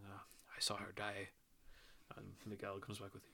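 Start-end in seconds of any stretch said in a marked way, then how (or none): 0.1-1.3 soft, under-the-breath mumble. Retelling a film scene, quoting the actor's line: mumbling like Antonio Banderas. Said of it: "Antonio Banderas kind of mumbles".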